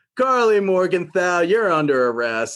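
put-on offhand, casual delivery. Retelling a scene where John Walker bursts in: nonchalant John Walker line. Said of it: "he says it like that, not even serious, just taking it so nonchalant".

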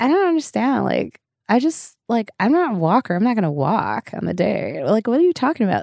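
put-on, oblivious-sounding young girl voice.

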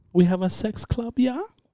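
very high-pitched, very slow, drawn-out, put-on German accent. Imitating a tour guide recommending a sex club, put-on German accent. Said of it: "With her German accent?".

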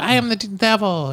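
put-on very high, slow, drawn-out little-girl voice. Retelling clips of the child actress saying the devil's lines: Linda Blair little girl voice. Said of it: "it's like a little girl voice".

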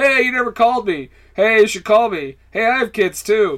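half-yelled, pestering mild yell, calling out. Retelling a movie scene on a packed bus: imitating someone yelling. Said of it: "He's just yelling in the back".

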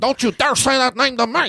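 very high, shrieking, screaming voice. Acting out two comedians in a parking lot: imitating a screaming argument. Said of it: "I'm just screaming at each other".

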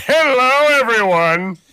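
squeaky cartoon villain voice. Podcast guest, just introduced, greets everyone in the wrong voice: Plankton voice. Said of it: "I wasn't playing for Plankton".

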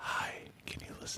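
creepy, hushed whisper. After asking listeners to get a lady to listen, speaker asks her in a creepy voice.

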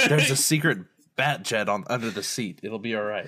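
ordinary talk

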